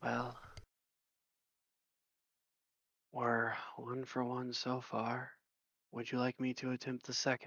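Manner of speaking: soft, hushed, half-whispered aside. Tabletop character looks over at a companion, hushed half-whisper. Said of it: "whisper in a hushed voice".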